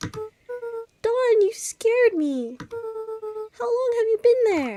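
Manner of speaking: high, loud startled yelp.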